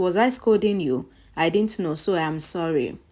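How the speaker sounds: ordinary delivery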